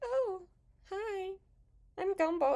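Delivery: overly sweet, high-pitched cartoon voice. Describing a least favorite season of a cartoon voice, in a soft sweet Gumball voice. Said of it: "It's like a soft, sweet voice".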